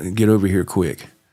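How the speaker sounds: very weak, feeble, barely-there voice. Retelling what mom said on the phone, imitating a very weak voice. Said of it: "in a very weak voice".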